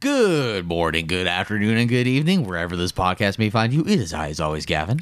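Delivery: deep radio announcer voice. Opening the podcast with his co-host, in a radio voice. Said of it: "we are doing radio voices today".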